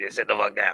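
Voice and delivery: little, raspy, croaky frog-like voice. Imitating a man telling someone to calm down: raspy frog-like voice. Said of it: "his little raspy frog-like voice".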